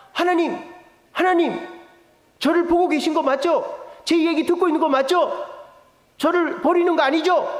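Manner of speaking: panicked, pleading tone. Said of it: "예수님이 너무 당황해서".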